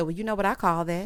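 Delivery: ordinary delivery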